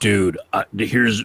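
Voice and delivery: put-on deep, slow voice. Mimicking the counter protesters coming up to the mic, use a deep Alex Jones voice. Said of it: "they sound like Alex Jones".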